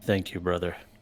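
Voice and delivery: soft mutter under the breath. Voicing a character thanking a helping soul, said under the breath. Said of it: "I'll say under my breath".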